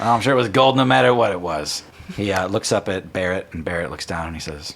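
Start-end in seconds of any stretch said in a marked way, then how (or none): 0.0-1.8 jaunty, cocky, self-assured swaggering charm. Voicing a swaggering character greeting the party with a handshake: voicing a swaggering character. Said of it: "bit of attitude, bit of swagger".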